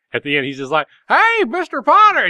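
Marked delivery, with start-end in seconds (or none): 1.0-2.2 elated, overjoyed, very high, happy hollering. Retelling a scene where a guard runs into the room, retelling a happy Jimmy Stewart shout. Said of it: "he's like shouting".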